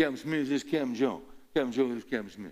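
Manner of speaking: put-on heavy Mississippi Southern accent. Retelling how a football official introduced the captains: strong Southern accent. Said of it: "They got this real deep southern accent".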